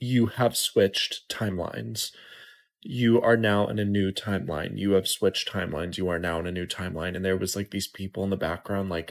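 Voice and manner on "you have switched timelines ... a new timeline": really creepy, eerie, unsettling recorded voice. Retelling a reel that played on repeat, the speaker imitates a woman's really creepy voice. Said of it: "saying in a really creepy voice".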